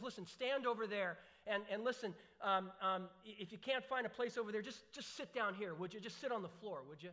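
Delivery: ordinary talk, nothing marked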